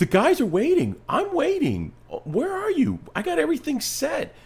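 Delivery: play-acted frantic, panicked worrying, very high-pitched. Retelling waiting for a late guest at eight o'clock: retelling own panic. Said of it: "I am panicking".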